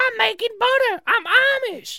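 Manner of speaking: high, distant-sounding voice.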